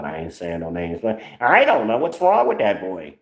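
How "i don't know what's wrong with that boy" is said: swooping, sing-song put-on woman's voice. Retelling what someone said to the speaker about a boy, imitating her voice. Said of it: "when I do this voice".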